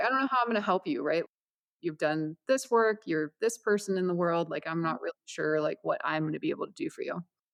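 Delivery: put-on speech while laughing. Retelling what a prayer practitioner said at their first meeting: imitating someone laughing while talking. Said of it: "she was just kinda laughing".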